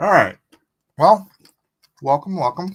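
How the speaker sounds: talking with mouth full. Host welcomes the show's audience while eating eggs, talking with a mouthful of eggs. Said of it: "Sorry I've got a mouthful of eggs".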